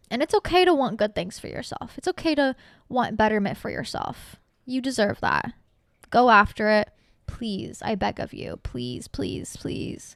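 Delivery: soft, heartfelt, emotional delivery. Speaking to listeners, getting a little emotional. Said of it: "kind of got a little emotional there".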